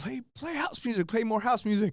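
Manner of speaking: very high-pitched, shrill scream. Retelling how a club owner screamed at the dj: imitating someone screaming. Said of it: "the owner was screaming".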